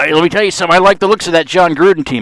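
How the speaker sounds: shrill, hollered, high, loud put-on voice. Discussing a football team, speaks in a Jon Gruden voice. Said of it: "I'm trying to do a John Gruden voice".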